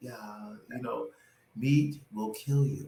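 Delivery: utterly calm, composed, soft delivery. Imitating how Mike answers questions about meat: imitating Mike's very calm voice. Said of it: "Very calm".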